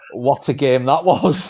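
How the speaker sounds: ordinary talk, nothing marked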